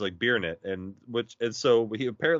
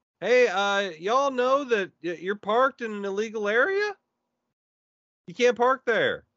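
put-on good old boy voice, much higher; 11 semitones higher than usual. Phoning a trucking company about their illegal parking, in best good old boy voice. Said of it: "I throw on my best good old boy voice".

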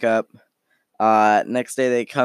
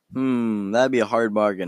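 ordinary talk

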